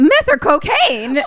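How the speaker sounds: high, loud, shocked and alarmed voice.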